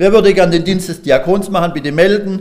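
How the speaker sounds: loud, high voice projected across a room.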